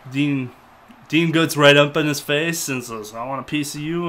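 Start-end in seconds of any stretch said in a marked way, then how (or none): none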